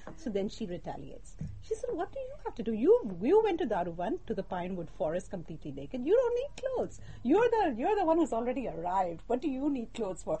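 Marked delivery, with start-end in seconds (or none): 1.9-10.4 mock sarcastic tone, higher pitch. Retelling how she retaliates against him in a story, acting out a sarcastic retort. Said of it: "So she's being sarcastic".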